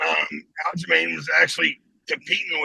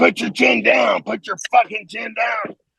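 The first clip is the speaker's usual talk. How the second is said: put-on, pitched-up holler; 6 semitones higher than usual. Retelling yelling back from behind the man's wife, acting out the yell. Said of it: "I'm yelling".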